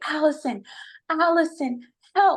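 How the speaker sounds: put-on high-pitched screaming. Retelling calling out to a roommate during a panic: retelling a scream for help.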